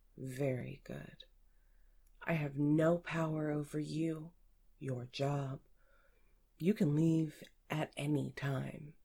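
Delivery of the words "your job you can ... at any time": ordinary delivery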